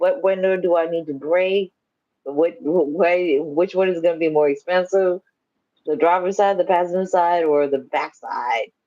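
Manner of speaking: ordinary talk, nothing marked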